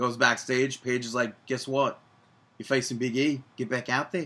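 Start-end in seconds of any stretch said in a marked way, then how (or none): 1.4-4.3 put-on Australian accent. Retelling what Paige said backstage to The Miz: Australian accent imitating Paige. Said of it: "That was Australian".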